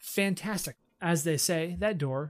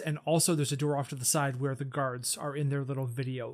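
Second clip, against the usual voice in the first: ordinary talk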